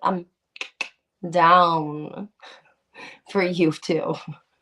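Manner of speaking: slow, stretched down with a rising pitch.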